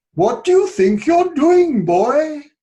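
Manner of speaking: put-on Welsh accent, scolding. Retelling what he once said to the English teacher's wife, in a Welsh accent. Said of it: "that's my Welsh accent".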